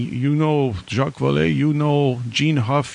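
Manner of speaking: put-on Middle Eastern-sounding accent. Retelling a caller who kept asking who he knew: imitating a weird Middle Eastern accent. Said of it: "weird, like, Middle Eastern accent".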